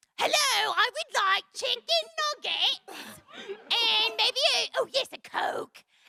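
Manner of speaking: very high-pitched, squeaky cartoon character voice. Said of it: "I would do it all in the voice".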